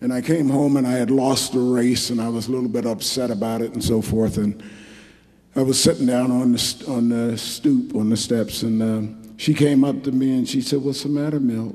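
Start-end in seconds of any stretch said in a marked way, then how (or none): 10.8-11.7 put-on sweet voice, faster. Man retelling what she asked him after he lost a race, imitating her sweet voice. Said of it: "like that with her sweet voice".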